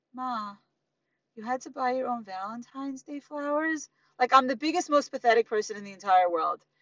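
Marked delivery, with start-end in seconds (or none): 0.1-3.9 soft, slow, sorry-for-you pitying tone. Retelling what her kids each said when she got home, imitating a pitying tone. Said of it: "And say in this voice".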